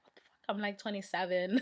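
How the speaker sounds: ordinary talk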